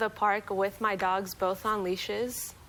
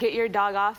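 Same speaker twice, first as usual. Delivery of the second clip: mock-angry, loud put-on yelling; 4 dB louder than usual. Telling how a man yelled at the speaker when their dogs met, retelling an angry yell. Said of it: "started yelling at me and saying".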